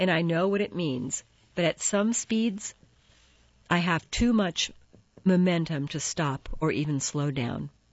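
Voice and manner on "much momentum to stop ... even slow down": ordinary delivery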